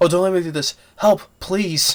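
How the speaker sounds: high, desperate pleading for mercy, acted. Retelling a film scene where a guy begs: imitating begging. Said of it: "Now you're begging for your life now".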